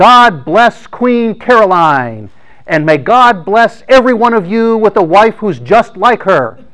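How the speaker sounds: put-on, booming, loud, high-pitched shout. Retelling what the duke said to the armed crowd, retelling a very loud shout. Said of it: "said in the loudest possible voice".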